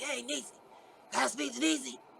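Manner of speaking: soft, hoarse, dry, rough raspy voice. Speaker retelling a phone call from him: imitating T Boy's raspy dry voice. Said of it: "his voice was so raspy and dry".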